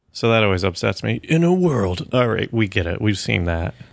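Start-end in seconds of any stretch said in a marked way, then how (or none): 1.2-2.0 pitched-up cinema trailer announcer voice. Mocking trailer parodies that still use voiceover, the speaker does a movie trailer voiceover voice. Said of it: "people are still using voiceover in their trailer parodies".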